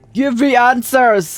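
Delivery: forceful, insistent, half-yelled demanding voice. Picturing questioning a local by yelling at her: mock yelling a demand. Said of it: "I don't wanna yell at her".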